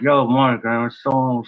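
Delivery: very slow speech through a clenched jaw. Retelling how a guy whose jaw was wired shut talked, imitating talking with jaw wired shut. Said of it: "So he's talking like this".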